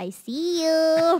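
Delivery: put-on eerie baby-talk voice. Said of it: "this baby voice could be very creepy".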